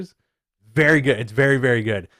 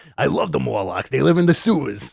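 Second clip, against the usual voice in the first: bad, creaky, raspy, rough Brooklyn accent. Doing a terrible Dave Meltzer impression about the Morlocks. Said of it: "I have a terrible Dave Meltzer impression".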